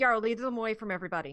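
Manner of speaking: loud fast call-out. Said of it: "I'm gonna call out".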